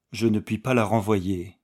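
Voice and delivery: plain reading voice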